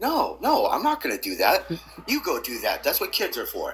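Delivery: swooping, animated dad voice. Recalling his father's advice about kids, imitating his father's voice. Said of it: "in his, in his voice".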